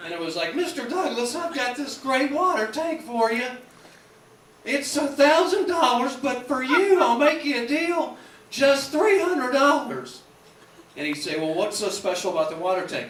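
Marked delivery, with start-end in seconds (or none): 0.5-10.2 helium-like squeak, high-pitched and loud. Retelling an episode: the salesman pitches Mister Douglas a water tank, Mister Haney's squeaky helium voice. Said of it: "he always had that voice like this. I don't know whether he was doing whippets or helium".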